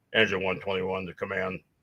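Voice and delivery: low, deep baritone voice. Retelling a radio call heard at a fire: imitating Jeff's baritone voice. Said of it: "legendary in our area for his baritone voice".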